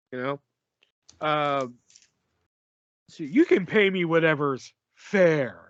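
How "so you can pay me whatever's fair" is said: put-on menacing voice with fair drawn out. Retelling a taxi driver's line from a movie: imitating a menacing voice. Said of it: ""I'm gonna fuck you up" voice".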